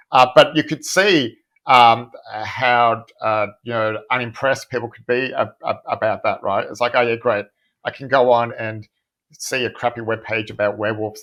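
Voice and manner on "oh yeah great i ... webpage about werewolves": usual speaking voice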